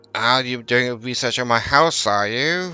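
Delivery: put-on elderly woman character voice. Voicing an old woman questioning a researcher about her house: old lady character voice. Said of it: "creep up on old ladies".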